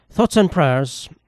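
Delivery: put-on Japanese accent in English. Imitating a company CEO's public response, in a put-on Japanese accent. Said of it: "It's like a Japanese accent".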